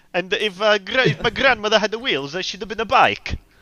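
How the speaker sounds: put-on fast Yorkshire-Italian accent. Doing Gino, the speaker puts on a weird Italian Yorkshire accent. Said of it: "weirdest Italian Yorkshire accent".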